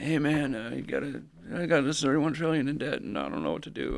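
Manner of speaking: put-on old man voice. Imagining an anonymous caller phoning in for advice, he voices the caller, Biden old-man impression. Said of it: "he sounds like an old guy".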